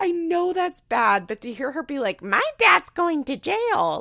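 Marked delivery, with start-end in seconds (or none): 2.2-4.0 put-on small kid's high, sing-song little voice. Retelling what she said, mimicking her little voice. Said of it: "it's so funny in her little voice".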